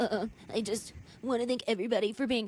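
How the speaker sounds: mock blubbering, tearful crying voice. Retelling a reality show scene where he breaks down: imitating someone crying. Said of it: "he starts the waterworks again".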